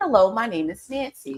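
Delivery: put-on, code-switched telephone voice. Showing how mom's voice changes into her Nancy voice: Nancy's voice, imitating mom. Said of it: "then there's Nancy's voice".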